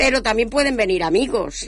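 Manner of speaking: normal talking voice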